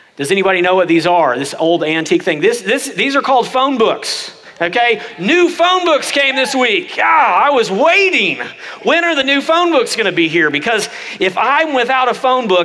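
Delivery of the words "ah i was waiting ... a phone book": high-pitched, heavily laid-on sarcasm. Addressing the audience about new phone books delivered to the office: sarcastic, laying it on thick. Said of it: "I'm being sarcastic if you haven't figured it out".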